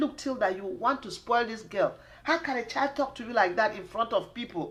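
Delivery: ordinary talk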